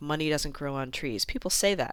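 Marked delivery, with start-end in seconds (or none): none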